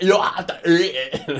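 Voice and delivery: put-on British accent, high, shrill, loud, slow, drawn-out. Repeating the other speaker's quoted order: put-on British accent. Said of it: "That's a perfect British accent".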